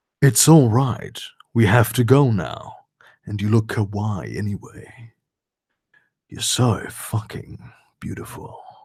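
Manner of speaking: very low, sexy, seductive voice. Reading a story aloud, narrator voices Draco's reply: Draco's sexy voice. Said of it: "Draco said in a sexy voice".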